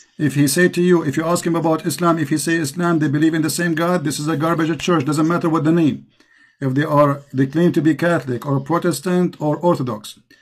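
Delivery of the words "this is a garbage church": normal talking voice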